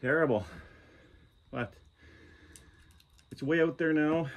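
winded, out of breath, panting between words. Just back from a rough run through sharp growth, speaking out of breath. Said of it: "we're out of breath".

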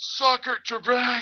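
put-on, very high scream at the top of the lungs. Recounting shouting to the guys 100 yards back on the trail: retelling a full-lung yell. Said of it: "I just yelled".

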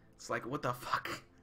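ordinary talk

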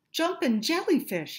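delighted, high, excited squealing exclamation. Peeking out of a cave to see if the shark has left, squealing. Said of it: "he squealed".

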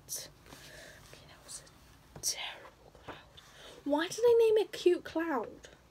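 speaking very softly. Speaker drawing for a video, talking to themselves, very quiet. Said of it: "I'm being very quiet".

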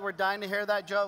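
ordinary talk

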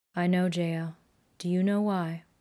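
slow, deliberate and clear. Narrator reads a man speaking face to face with the narrator, slow and clear. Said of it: "slowly and clearly".

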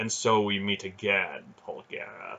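plain reading voice

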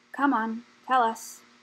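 said wearily at a weary pace. Pressing the rat to share what she knows, wearily. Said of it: "asked Slatebeard wearily".

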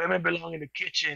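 rough, creaky masculine voice. Retelling how someone got mad, imitating a chauvinistic tone. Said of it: "took like a real male chauvinistic type of tone".

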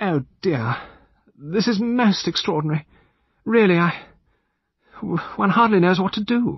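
very high, unsure, uncertain voice, at a loss. Narrator reads a lady's line as the butler hesitates in the doorway, uncertain. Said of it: "Lady Chevenix-Gore said uncertainly".

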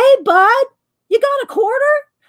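loud, very high voice. Retelling asking a guy for a quarter in a buzzing room, retelling talking loud. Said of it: "So you have to talk loud anyway".

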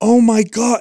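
put-on high, animated, excited toddler gasp. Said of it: "he gets so animated when he's excited".

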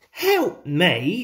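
cross, irritated, clearly put out. Narrating a character rebuffing an offer of help in a story, said crossly. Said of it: "said Thomas crossly".

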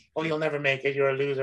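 ordinary talk, nothing marked

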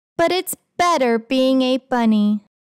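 ordinary delivery

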